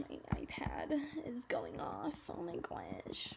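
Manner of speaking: odd, slow, soft whispery talk.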